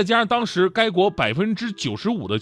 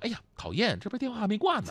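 soft, muttered aside, half to oneself; 3 semitones higher, 9 dB quieter than usual. Advising listeners to mutter this on the phone before hanging up: quiet muttering. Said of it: "你小声嘟囔一句".

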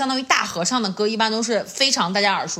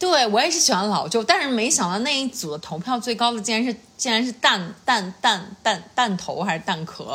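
ordinary talk

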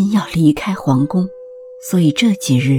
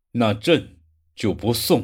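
icy, cold, very low-pitched voice; 7 semitones lower, 6 dB quieter than usual. The emperor, hiding his expression, speaks before walking out of the chamber, in a cold voice. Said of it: "声音冷冷的说道".

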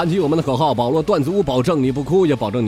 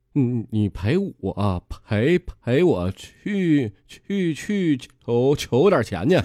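put-on stammer with repeated syllables. Telling a joke, voicing a new girlfriend asking her boyfriend something, stuttering. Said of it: "这他妈是叫叫口吃".

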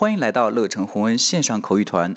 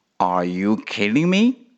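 rising tune with the pitch climbing on "me". Teaching question intonation, rising at the end on me. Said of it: "这个疑问句呢，我们的语气要上扬。".

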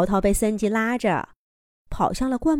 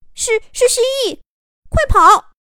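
very high, shrill, loud, terrified scream; 7 dB louder than usual. A creature lunges at two characters; one shrieks to the other, terrified scream. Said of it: "尖叫了一声".

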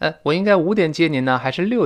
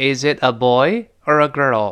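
put-on pitch rising on boy, dropping on girl. Teaching English question intonation: rise on boy, fall on girl. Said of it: "这个第一个a boy 是升调，a girl 是降调的".

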